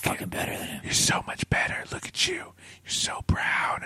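soft whispering. Acting out a horse whisperer urging a horse to win: whispering to a horse. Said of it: "whispering into, to the horse".

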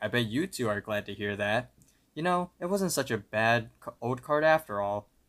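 ordinary talk, nothing marked

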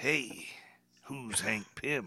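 very quiet, soft, everyday speaking voice. Correcting someone's impression of him, showing how he really sounds. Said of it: "I sound more like this".

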